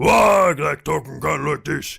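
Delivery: loud, rough, throaty, guttural orc voice. Describing how orcs usually sound, demonstrating a guttural orc voice. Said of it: "more like guttural to it".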